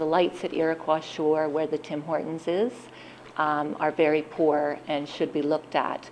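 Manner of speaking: plain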